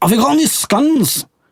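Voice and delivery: put-on really broad Scottish accent, pitched high. Retelling a Scottish man's question to the speaker, in a broad Scottish accent. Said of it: "speaking in a really broad Scottish".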